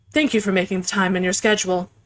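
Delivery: monotone character voice. A speaker voicing the character Helen Young, in a monotone Helen Young voice. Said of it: "a similar voice to Emma, but more monotone".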